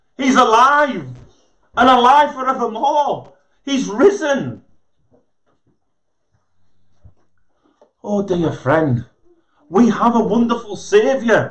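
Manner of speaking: joyful, exultant, rejoicing tone. Addressing dear friends after apologizing for shouting, shouting out joyfully. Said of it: "But how can you not shout out?".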